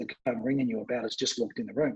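discreet, very quiet, hushed murmur. Retelling a mate's phone call, imitating him speaking very quietly. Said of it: "he said very quietly".

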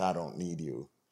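mock muttering under the breath. Speaker acting out their own inner voice, retold as said under breath. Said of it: "under my breath".

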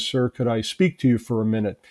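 plain

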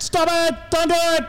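mock stern, bossy scolding yell. Asked why their dad yells at them, the speaker is retelling dad's yell. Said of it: "He just yells".

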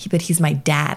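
ordinary talk, nothing marked

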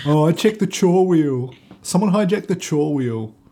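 put-on high, casual middle-class Australian accent. In a share-house bit, a housemate argues about the chore wheel; middle-class Australian accent. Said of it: "Middle class Australian hospitality worker in a share".

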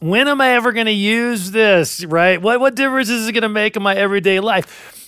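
put-on whiny, complaining voice. Imitating the question algebra and geometry students repeat: imitating a whiny voice. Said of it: "usually in a whiny voice".

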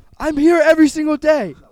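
loud, high yell. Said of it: "Stop yelling".

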